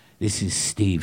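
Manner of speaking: put-on disguised voice. Acting out a character calling the cops: disguised voice on a phone call. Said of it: "She disguises her voice".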